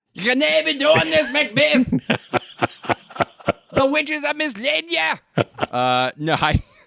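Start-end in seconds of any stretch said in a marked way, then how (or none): 0.2-5.5 bad, very high-pitched, laid-on Scottish accent. Mocking a Macbeth staging full of bad Scottish accents: Scrooge McDuck voice. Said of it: "Everybody sounds like Scrooge McDuck".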